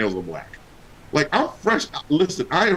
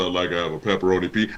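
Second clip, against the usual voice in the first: put-on menacing, frightening voice, lower pitched; 9 semitones lower than usual. Showing how Nate sounds ordering pizza on the phone, imitating Nate's menacing voice. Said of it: "it sounds like somebody's gonna come get you".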